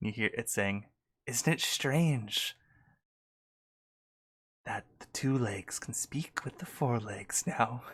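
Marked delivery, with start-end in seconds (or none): 1.3-7.8 tiny, little, slow whispered rat voice. During a dice game, voicing a rat speaking from a crack in the wall, tiny whispering rat voice. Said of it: "a little tiny voice whisper out".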